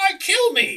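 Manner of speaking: very high, loud delivery. Retelling how Alf would pop up from the set, Alf voice. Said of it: "be like".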